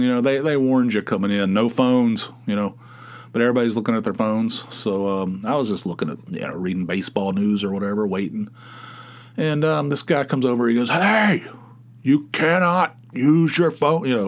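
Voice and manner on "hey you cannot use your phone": real mean, very slow, drawn-out, pitched-up delivery. Retelling a guy telling him off for using his phone, mock mean warning. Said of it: "he's like real mean about it".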